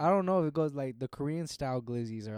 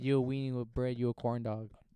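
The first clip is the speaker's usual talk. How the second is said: ordinary delivery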